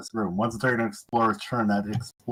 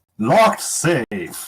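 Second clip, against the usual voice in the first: loud, booming game show host voice; 4 semitones higher, 8 dB louder than usual. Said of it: "a game show host voice".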